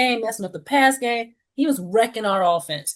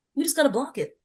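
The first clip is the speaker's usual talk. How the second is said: casual, unworried, nonchalant, slightly raised voice; 5 semitones higher, 5 dB quieter than usual. Retelling watching a field goal try from the couch: imitating own nonchalant remark. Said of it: "I said it so nonchalantly".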